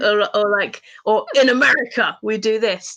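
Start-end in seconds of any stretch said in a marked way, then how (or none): 1.4-2.9 put-on parody American voice. Retelling a joke from a fan parody: imitating a parody American character. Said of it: "he'll make the character go".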